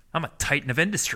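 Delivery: mock puffed-up, dead-earnest tone. Retelling a bro's boast at a wedding: imitating a puffed-up, dead-earnest boast. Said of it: "he said to me with, with no sense of irony, no sense of sarcasm whatsoever".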